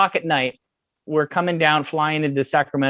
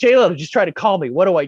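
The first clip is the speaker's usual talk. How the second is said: play-acted frantic outburst in full panic; 2 semitones higher than usual. Retelling a call to the speaker's wife, reenacting own panicked words. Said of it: "So I call my wife in a panic".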